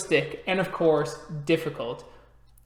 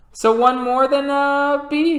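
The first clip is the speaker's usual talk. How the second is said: trembling voice, very high, very drawn out; 10 semitones higher, 7 dB louder than usual. Playing a character in a group story scene about staying for dinner; quivering voice. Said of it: "You hear a bit of quivering in his voice".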